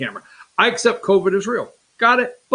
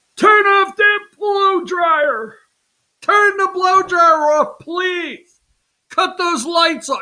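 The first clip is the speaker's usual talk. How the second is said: put-on dad voice hollering, very high-pitched; 10 semitones higher than usual. Playing a Texas dad of four teenage daughters facing the power bill, mock yelling. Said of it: "you're yelling this morning".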